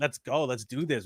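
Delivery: play-acted pumped, energized, excited cheering. Retelling walking in and turning the lights on: imitating own excited hype. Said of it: "I get all excited when I walk in".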